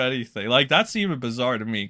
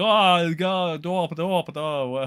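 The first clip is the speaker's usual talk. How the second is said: put-on German accent, very drawn out and slow; 5 semitones higher than usual. Speaker recalling a german guy and how he talked: mock german accent. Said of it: "however the German accent is".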